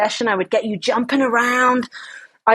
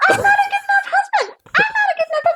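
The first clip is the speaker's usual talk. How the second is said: very high, squeaky little cartoon mouse voice. On a podcast, prompted by the host to repeat a limiting belief: squeaky Mickey Mouse voice. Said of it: "say that limiting belief in a squeaky Mickey Mouse voice".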